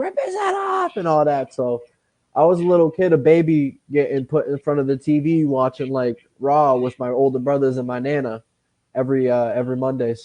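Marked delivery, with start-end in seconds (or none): 0.0-1.0 acted, very high, shrill screaming yell. Retelling how Nana screamed while watching wrestling: imitating someone screaming. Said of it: "She'd be screaming".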